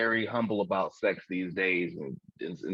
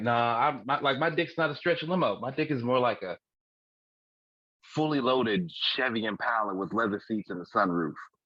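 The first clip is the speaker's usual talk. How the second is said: ordinary talk, nothing marked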